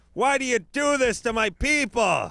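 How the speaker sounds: very high, loud yell. Acting out an imagined movie scene, hanging under a bridge: yelling up at God. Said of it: "he's yelling up at God".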